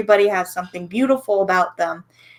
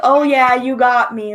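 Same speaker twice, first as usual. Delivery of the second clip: loud, drawn-out, sarcastic tone; 5 semitones higher, 5 dB louder than usual. Retelling own reply to people saying things online: imitating own sarcastic reply. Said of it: "in a sarcastic way".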